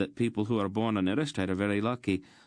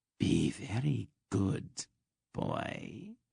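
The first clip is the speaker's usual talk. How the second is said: slow, whispered, hissing snake voice; 5 dB quieter than usual. Reading a story aloud, a snake speaks into a boy's ear, hissing snake voice. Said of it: "the snake hissed in his ear".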